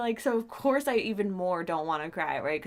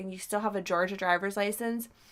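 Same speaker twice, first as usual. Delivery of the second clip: ordinary delivery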